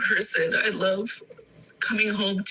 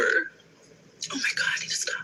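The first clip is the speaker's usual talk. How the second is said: slow, breathy whisper, overcome with emotion; 3 semitones higher than usual. Talking to listeners about a past marriage, then cutting off: emotional. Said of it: "I woke up like really, really emotional".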